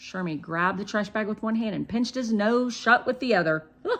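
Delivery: ordinary delivery, nothing marked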